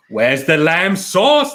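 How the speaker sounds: loud, high shout with swooping pitch. Reading viewer comments, then quoting a favorite line as Gordon Ramsay. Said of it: "so you sound like Gordon Ramsay".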